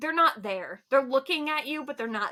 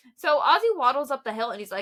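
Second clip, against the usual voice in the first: ordinary talk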